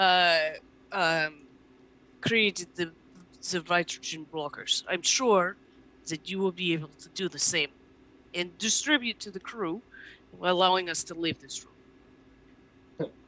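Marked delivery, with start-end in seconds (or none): 4.9-13.1 put-on Russian accent. Voicing a character who asks a doctor to distribute blockers: Russian accent. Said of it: "how do I do this with a Russian accent?".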